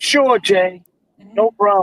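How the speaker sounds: put-on New York accent. Telling others how Donna answers when you go straight to the top, imitating Donna's New York accent. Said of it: "Donna has that New York accent on her".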